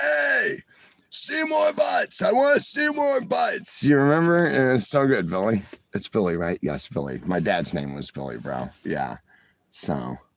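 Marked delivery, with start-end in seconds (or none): 0.0-3.8 play-acted very high, shrill, raspy, rough scream. Retelling a Simpsons prank call to the tavern, imitating Moe screaming. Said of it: "And then Moe would scream out".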